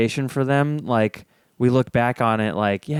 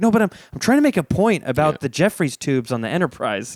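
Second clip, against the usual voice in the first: put-on earnest, insistent, dead-serious tone; 2 semitones higher than usual. Retelling own reaction when someone jokes mid-point: imitating own serious tone. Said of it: "get really serious talking about something".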